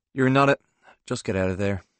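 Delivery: ordinary delivery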